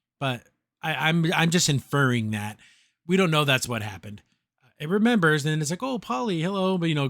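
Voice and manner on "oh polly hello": put-on high little robot baby voice. Retelling a story in which a robot remembers someone; little robot baby voice. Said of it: "it's like a little like a robot baby voice".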